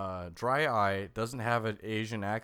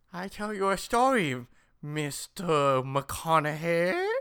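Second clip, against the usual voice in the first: put-on, high-pitched, loud Chinese accent; 7 semitones higher, 5 dB louder than usual. Asked why he sounds that way, you do the voice again: Kim Jong-il from Team America voice. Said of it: "I leave the Chinese accent to you".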